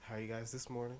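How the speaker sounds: imitated somber, soft, mock-somber delivery. Imitating how he always talks, greet the guys this morning, in a put-on somber, soft voice. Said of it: "He's always talking so somber and soft".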